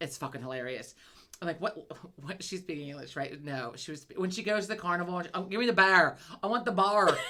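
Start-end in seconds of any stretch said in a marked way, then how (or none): 5.4-7.2 loud, thick, really bad Southern accent. Retelling what Teeter said at the carnival, in a thick Southern accent. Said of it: "really bad Southern accent".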